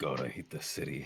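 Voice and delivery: low, quiet mumble. The narrator voices Grayson out of earshot of the guards, Grayson mumbling under breath. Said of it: "Grayson mumbling".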